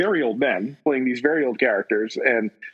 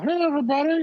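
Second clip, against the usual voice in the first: put-on side-of-mouth ventriloquist voice, higher; 14 semitones higher than usual. Imagining Banshee throwing his voice like a ventriloquist: talking out of side of mouth. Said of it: "he talks out of the side of his mouth".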